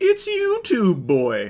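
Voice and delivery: high cartoon voice, swooping pitch. Retelling what an officer said at the end of a reel: Tootsie Pop owl voice. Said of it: "sounding like the owl from the "How many licks".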